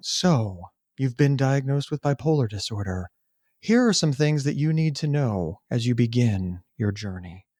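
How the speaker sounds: overly sweet, saccharine, grave doom-and-gloom seriousness. Mocking how a bipolar diagnosis is often explained: mock serious, saccharine tone.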